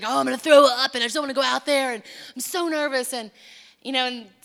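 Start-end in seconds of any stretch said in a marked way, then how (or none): 0.1-3.1 put-on nervous preacher voice. Retelling how a preacher said he felt before preaching: imitating Zach sounding nervous. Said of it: "he gets really nervous where he preaches, and he's like".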